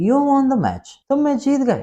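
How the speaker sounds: very high voice, stunned and astonished. Teaching strong emotion, an example line said very surprised. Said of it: "मैं बहुत ज़्यादा हैरान होके कहता हूँ".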